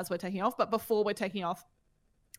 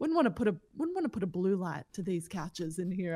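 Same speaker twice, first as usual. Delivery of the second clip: plain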